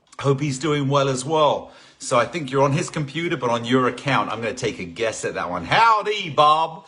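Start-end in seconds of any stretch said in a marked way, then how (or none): 5.7-6.7 loud, high, put-on cowboy accent. Greeting a viewer by name as a joke: put-on cowboy accent. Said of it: "my cowboy accent is really good".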